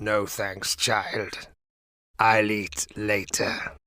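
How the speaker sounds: put-on deep, tuneless, gravel-voiced old woman barking. Grandma, propped up in bed, turns down Rosa's offer of stew: deep, tuneless, gravelly bark. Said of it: "barked Grandma, her voice deep and tuneless, like a saxophone full of gravel".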